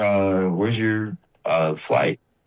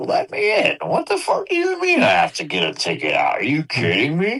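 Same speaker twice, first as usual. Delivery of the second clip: mock spoiled indignation, high and swooping; 8 semitones higher than usual. Acting out a spoiled American demanding entry at a border: mock entitled indignation. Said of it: "I'm just so fucking spoiled American. I'm like".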